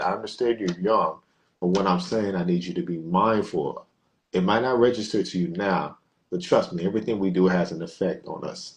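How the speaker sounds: ordinary talk, nothing marked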